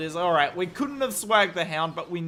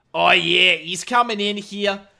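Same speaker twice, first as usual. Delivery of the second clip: loud, put-on Australian esports caster accent; 6 dB louder than usual. Casting a match and switching to an Aussie voice: Aussie caster accent. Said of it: "I have to do like the Aussie".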